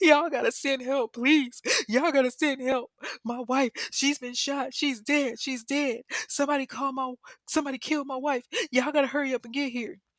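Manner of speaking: fake tearful sobbing, pleading tone. Retelling a husband's staged 911 call: imitating fake crying on phone. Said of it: "he's crying on the phone".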